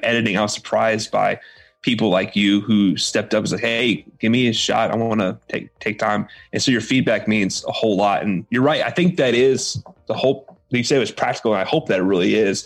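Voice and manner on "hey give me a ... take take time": normal talking voice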